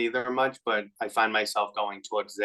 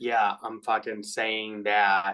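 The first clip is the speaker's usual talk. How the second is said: usual speaking voice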